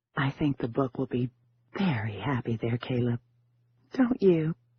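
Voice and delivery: airy, breathy delivery. Narrator reads a woman's line to a startled man, in a breathy voice. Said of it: "She said in a breathy voice".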